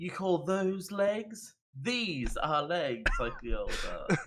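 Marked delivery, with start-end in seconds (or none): 0.0-3.1 jeering, boastful, mocking, scornful tone. Acting out a character mocking a deer's legs: mocking taunt. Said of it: "And the mock was".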